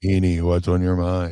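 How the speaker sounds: flat monotone put-on voice. Imitating how the other speaker usually opens: monotone Tommy Dreamer-ish voice. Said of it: "very, uh, monotone, Tommy Dreamer-ish".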